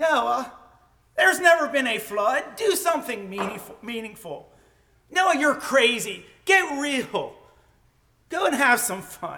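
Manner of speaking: sarcastic, sneering, mocking jeer. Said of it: "Can you hear the sarcasm?".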